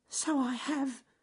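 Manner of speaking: very high, tiny, squeaky little voice. Narrator reading a story, voicing Ernest Fluffy Rabbit after he has fallen: squeaky voice. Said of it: "squeaked Ernest Fluffy Rabbit".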